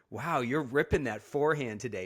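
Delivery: put-on teasing voice. [name] retells Mike's mind games during play, imitating Mike's smirky teasing. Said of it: "he has to have this smirky face".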